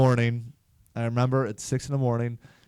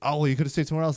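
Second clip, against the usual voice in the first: put-on snappy delivery; 2 semitones higher than usual. Retelling her reply to a joke about the buckets: imitating a snappy reply. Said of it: "she kinda gets snappy".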